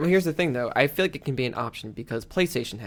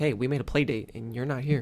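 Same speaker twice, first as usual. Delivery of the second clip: ordinary talk, nothing marked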